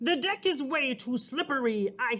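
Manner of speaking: plain reading voice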